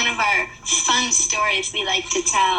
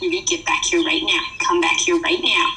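put-on low, serious, stern parent voice; 4 semitones lower than usual. Retelling a story about mom, imitating her stern serious mom voice. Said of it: "using her serious mom voice, like".

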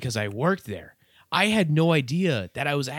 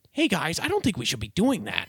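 animated delivery with pitch swooping around. Retelling an action movie scene: Chris Pratt impression. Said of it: "you hear Chris Pratt come out and he goes".

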